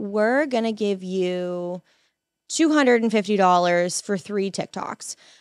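ordinary talk, nothing marked

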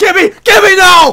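anguished, high-pitched, loud yell of despair.

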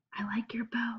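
very quiet, hushed whisper. A schoolgirl speaks to the classmate sitting behind her, whispered. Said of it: "whispered Angela".

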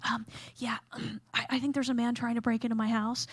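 whispered delivery. Retelling a 911 call about a break-in, speaker to the dispatcher; retelling a whisper. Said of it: "I'm shh".

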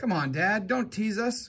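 pleading. Grego speaks to his father, pleading. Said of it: "Grego pleaded".

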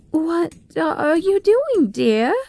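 nervous, uneasy tone. Mrs. Bartleby finds her son Bradley in the chimney and asks him, nervously. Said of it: "Asked Mrs. Bartleby nervously".

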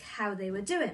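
ordinary delivery

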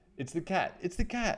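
high, startled, frightened cry. Squeak, seeing a head with sharp ears above the sofa, crying out. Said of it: "he cried".

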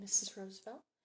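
ordinary delivery

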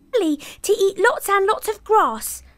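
small voice. Reading a children's story, the youngest billy goat answering the troll, small voice. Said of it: "with such a small voice".

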